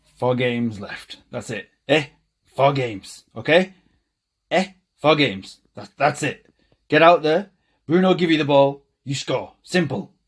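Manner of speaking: put-on Dutch accent. Speaker impersonating Ten Hag instructing his players, bad Ten Hag Dutch accent. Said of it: "I apologise for the accent".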